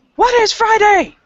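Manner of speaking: shrill, very high, loud yell. Speaker voicing Reiko calling back over her shoulder, Reiko yelling. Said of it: "glances back over her shoulder and yells".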